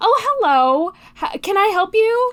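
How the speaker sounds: caring, high-pitched customer service voice. Describing the voice the speaker puts on for customers: high-pitched customer service voice. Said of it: "I just get very high-pitched when I put on my my customer service voice".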